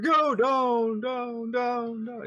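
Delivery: very high, very slow, drawn-out echoing call. Voicing a yell echoing down a long hole: echoing voice. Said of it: "You hear your voice echoes".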